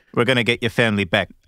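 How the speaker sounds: fake, put-on South African accent. Discussing Leonardo DiCaprio's movie accents, speaker quotes Blood Diamond: bad DiCaprio Blood Diamond accent. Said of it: "My all-time favorite bad accent is Blood Diamond?".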